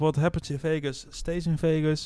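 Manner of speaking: plain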